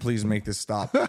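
acted-out tearful bawling. Speaker retells someone's plea during a frightening night, imitating someone bawling. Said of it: "Jake's bawling saying".

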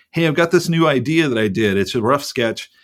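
ordinary talk

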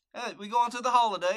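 put-on muddled British and Australian accent. Talking about English holidays, the speaker drops into a mixed British-Australian accent. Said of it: "you kind of sounded British and Australian at the same time".

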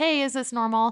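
normal talking voice

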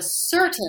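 emphasis lands on the word certain. Coaching someone on how to say a title, stress on certain. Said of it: "emphasize the word certain".

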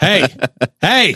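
mock scolding, pretend telling-off tone. Playing a cast member stopping someone painting: mock scolding as cast member. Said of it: "I can do it".

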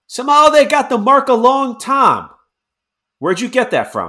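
very high, swooping shout. Voicing a character who squints, then yells out in common. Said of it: "he yells out in common".

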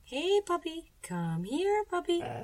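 very high-pitched, little calling-out voice. Reading a story aloud, a character calls a puppy over: high voice. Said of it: "in that high voice of hers".

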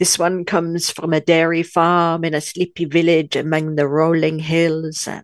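slow, put-on French accent. Retelling the waiter describing the cheeses, French accent. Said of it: "And I'm doing a French accent".

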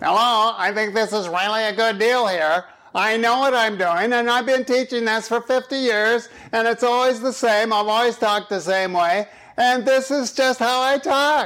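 grating, nasal lecturer voice. Demonstrating a type of talker who grates on your nerves, in a nasal professor voice. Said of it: "type is the nasal professor".

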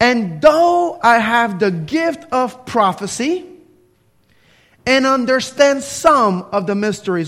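very slow, deliberate, unhurried, each word drawn out. The speaker reads one verse of 1 Corinthians 13 aloud, reading very slowly. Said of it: "I'm going to read it very slowly".

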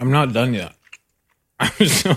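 speaking while chewing, mouth full of food. Eating from a snack bag with others, apologizing while still chewing, talking with mouth full. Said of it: "I'm still chewing".

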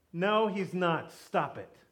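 slow, dismissive, scolding tone. Retelling the gathered church answering the servant: imitating a rebuke. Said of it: "They rebuke her".

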